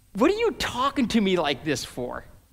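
put-on snarky, sarcastic snap with swooping pitch. Retelling how Nicodemus answers Jesus: imitating Nicodemus sarcastically. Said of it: "it's sarcasm".

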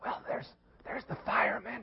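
put-on child's whisper. Retelling a child telling a telemarketer his age: imitating a child whispering. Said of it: "little Jimmy keeps whispering".

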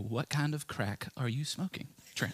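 put-on soft southern belle accent. Quoting how she would answer him, in a southern peach accent. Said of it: "her nice little southern peach accent go".

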